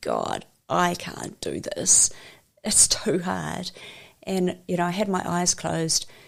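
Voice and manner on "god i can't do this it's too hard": mock drawn-out, tearful crying plea, very slow. Retelling a moment alone in the bathroom, crying out to God: retelling crying to God. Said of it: "just crying and going".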